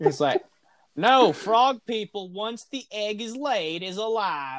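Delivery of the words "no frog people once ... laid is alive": lazy, slow, put-on Southern drawl, laid on. Mocking an argument about frog eggs in a Southern accent. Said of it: "Why am I doing Southern?".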